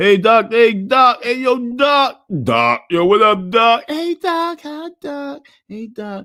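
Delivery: put-on, loud, cheery, fake-friendly, very slow and drawn out. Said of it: "everybody gonna put their fake face on".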